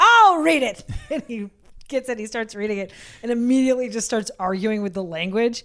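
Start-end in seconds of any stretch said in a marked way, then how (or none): 0.0-0.8 furious, frustrated, shrill, very loud, high bellow. Speaker recounts a frustrated man snatching a paper from its reader, retelling a yell. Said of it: "he yells".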